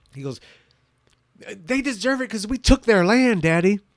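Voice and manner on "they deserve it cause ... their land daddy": very loud, high, frustrated emotional outburst. Retelling an argument, quoting the daughter: imitating a frustrated emotional outburst. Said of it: "has this emotional outburst".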